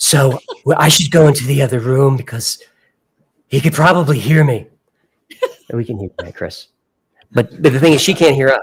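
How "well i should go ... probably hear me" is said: put-on loud whisper. Imitating someone who whispers loudly about leaving the room: imitating a loud whisperer. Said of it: "she's one of those loud whisperers".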